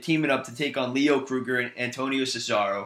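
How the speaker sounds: ordinary talk, nothing marked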